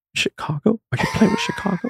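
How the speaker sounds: play-acted teary voice, on the verge of tears. Speaker quotes a woman's reply to his news, imitating a teary voice. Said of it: "in like a teary voice".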